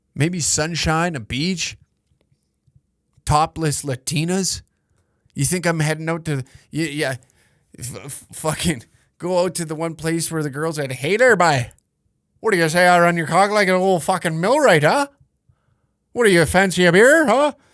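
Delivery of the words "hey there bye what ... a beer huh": put-on Canadian woman's accent, deliberately unsexy flirtatious tone. Making fun of how Canadian women talk; put-on Canadian woman accent. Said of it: "Canadian women's accents".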